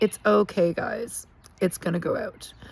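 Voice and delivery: calm, unruffled, super calm, unbothered voice. Retelling how a drunk friend reassured everyone during a fire, imitating a super calm tone. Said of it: "Just super calm".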